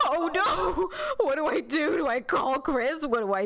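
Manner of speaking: imitated panicked cowering voice. Retelling cowering in a bathroom corner over a centipede: imitating own past panic. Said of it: "cowering in the corner, like".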